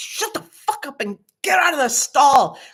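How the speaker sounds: mock cranky yell, high-pitched. Retelling how she yelled at kids in a bathroom stall, retelling a yell. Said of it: "And so I yell at them".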